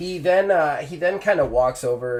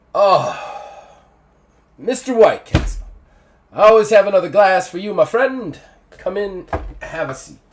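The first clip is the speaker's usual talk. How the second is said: raised, pitched-up forced jovial cheer, tinge of regret; 5 semitones higher, 7 dB louder than usual. Game narrator voices a drinking man welcoming the player's character, jovial tone, tinge of sadness. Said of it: "he puts on the jovial tone".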